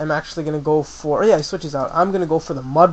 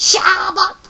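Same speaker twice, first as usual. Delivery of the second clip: very high-pitched cartoon creature cry; 3 dB louder than usual. Describing the show's Team Rocket losing, imitating Arbok's cry. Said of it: "Arbok's like".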